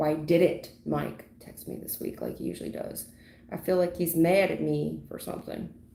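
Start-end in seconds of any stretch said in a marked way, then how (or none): none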